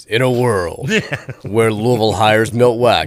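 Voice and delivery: epic, big movie-trailer narrator voice. Imagining an opposite-universe scenario in the big movie-trailer voice. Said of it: "the big voice guy from movies".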